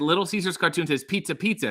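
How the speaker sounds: normal talking voice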